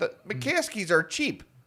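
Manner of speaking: put-on sports-radio caller voice. Imitating a caller to the Score: high-pitched Score caller voice. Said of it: "I make it a little more high pitched".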